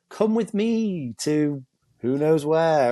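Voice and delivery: put-on, mock-seductive female grim reaper voice. Imagining the reaper who comes at death, voicing a put-on seductive lady reaper. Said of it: "a nice, seductive lady skeleton reaper".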